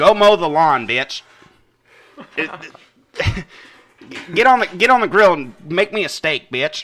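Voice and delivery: put-on, loud, shrill, bossy, berating Southern woman's voice. Acting out an abusive southerner berating her husband: put-on abusive southern wife voice. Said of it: "I like to imagine that I'm a girl saying it".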